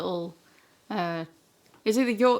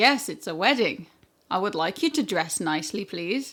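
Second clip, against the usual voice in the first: mock matter-of-fact, stating-the-obvious tone. Retelling what the speaker told their mum, in a put-on stating-the-obvious voice. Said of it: "like stating the obvious kind of voice".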